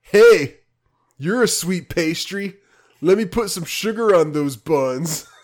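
imitated surfer dude voice. Retelling the surfer guy's line to one of the girls, imitating the surfer guy. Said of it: "he turns to one of the girls and he goes".

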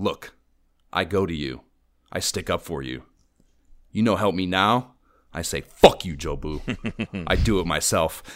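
put-on gritted-teeth speech. Retelling a fallen game character's defiant last words: imitating speaking through gritted teeth. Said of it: "and through gritted teeth".

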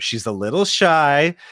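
high announcer voice. Reading a book line the way a friend performed it: imitating Courtney's announcer delivery. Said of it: "I read it in her, her performance in Jurassic World".

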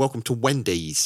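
terrible Australian accent slipping into British. Introducing the episode's subject, the host tries a terrible australian accent. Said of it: "My Australian accent's going to try and come out".

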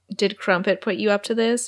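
usual speaking voice

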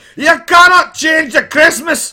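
shrill, full-volume, very high Scottish yell. Imagining a rewrite of the film plot: imitating a Scottish guy shouting. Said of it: "one Scottish guy being like".

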